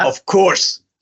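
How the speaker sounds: put-on Scottish accent, pitched high. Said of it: "Your Scottish accent's so strong".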